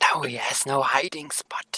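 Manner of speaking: hushed stage whisper. Speaking in character in a game while an ogre is nearby: whispering. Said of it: "I whisper".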